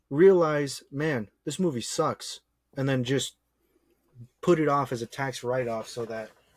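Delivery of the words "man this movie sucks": normal talking voice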